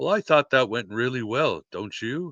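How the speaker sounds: put-on very dry delivery with a strong English accent. Retelling David in a limousine with his staff after the screaming match, dry English accent. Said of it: "very English says".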